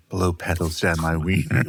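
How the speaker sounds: very gentle, soft delivery. Retelling what a character said, imitating a gentle delivery. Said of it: "He said it very gently".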